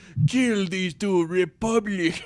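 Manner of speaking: silly high, drawn-out voice. Imitating a character's line while watching the movie: ridiculous General Grievous voice. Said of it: "his voice sounds ridiculous".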